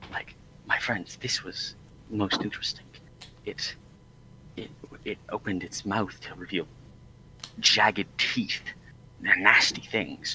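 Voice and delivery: hushed whisper. Telling friends something no one outside should know, whispering. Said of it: "I'm I'm whispering all of this".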